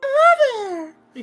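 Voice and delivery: put-on high-pitched puppet voice. Showing the others the highest voice: high-pitched Elmo voice. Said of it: "my highest is the".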